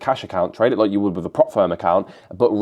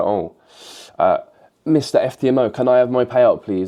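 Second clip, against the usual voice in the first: mock, slow, pleading begging in a boy voice; 3 semitones higher than usual. Pretending to ask a prop firm for a payout: mock begging like a hungry boy. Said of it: "Like that fucking boy that's, like, asking for food".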